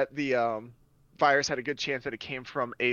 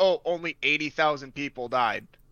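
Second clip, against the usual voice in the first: ordinary talk, nothing marked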